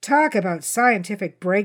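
plain reading voice

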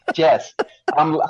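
laughing through the words while talking.

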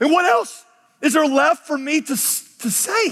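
high, exasperated, bewildered pleading preacher voice. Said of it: "He's exasperated, almost bewildered".

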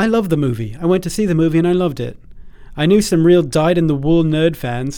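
put-on generic British accent. Quoting an actor's remarks, doing a generic British accent as Paul Bettany. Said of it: "i'll just do the generic british accent".

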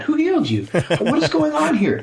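high-pitched outraged tone.

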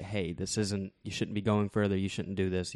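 usual speaking voice

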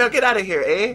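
put-on Irish accent. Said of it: "Irish Swede".

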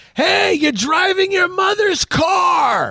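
put-on very high teasing holler, "car" drawn out. Speaker at a stop sign retells a friend yelling from the street, retelling a friend's teasing yell. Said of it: "He yells at me from Ocean Avenue".

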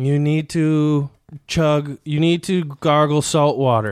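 mock condescending, talking-down tone. Retelling how a clinic worker lectured about gargling: imitating condescending talking down. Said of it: "She was talking down to me like".

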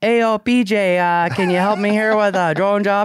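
put-on New Mexican accent. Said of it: "He doesn't have that accent, though".

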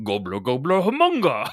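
high, loud, bellowed mock Swedish gibberish.

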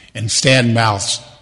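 normal talking voice

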